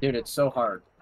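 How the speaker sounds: dripping with sarcasm. While streaming, answering a question sarcastically. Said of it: "I said that so sarcastically".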